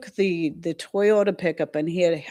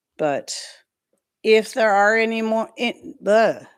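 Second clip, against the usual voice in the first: slow, stuttering, stumbling over the words; 4 semitones higher than usual. Chatting while cleaning lanterns off the plant, stuttering. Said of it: "I'm stuttering".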